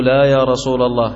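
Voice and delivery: plain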